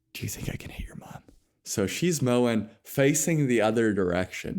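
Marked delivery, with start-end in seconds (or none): 0.2-1.3 put-on mutter under the breath, quieter. Retelling how dad asked this while mom mowed: imitating someone under his breath. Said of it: "under his breath".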